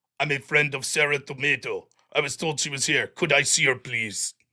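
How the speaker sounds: very low, deep robotic voice. Reading a viewer's donation message aloud: Terminator robot voice. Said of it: "in Terminator bot voice".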